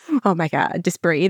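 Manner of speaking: plain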